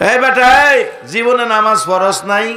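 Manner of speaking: scolding, rebuking tone.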